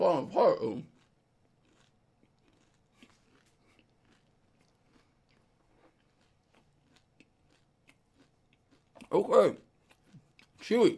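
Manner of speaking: talking through a mouthful. Eating a fruity crispy treat while talking to viewers, talking with mouth full. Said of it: "Sorry for chewing so much".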